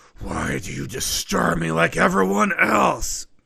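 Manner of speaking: loud, rough, rasping, furious dragon-voice shout. Voicing a pissed-off sapphire dragon yelling at the party: angry dragon yelling. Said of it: "You can hear her yell out".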